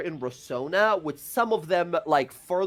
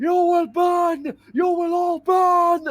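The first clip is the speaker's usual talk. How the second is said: shrill, very high, loud scream; 13 semitones higher, 7 dB louder than usual. Voicing a captured prisoner threatening the party: screaming threats. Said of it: "he's just screaming again at you all".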